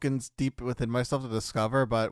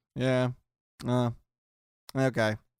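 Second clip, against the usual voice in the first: put-on, flat, very low-energy monotone. A podcaster mimics how the person who hits record greeted him; imitating Phoenix's monotone. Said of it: "very monotone, very just like".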